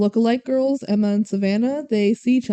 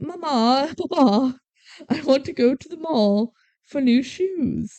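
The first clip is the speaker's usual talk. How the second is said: slow, put-on British accent; 2 semitones higher than usual. Telling a story, a rich girl asks her parents for things: British accent. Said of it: "I like how you're just adding a British accent to all of this".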